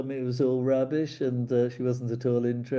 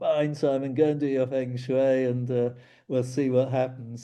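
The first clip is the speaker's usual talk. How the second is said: ordinary talk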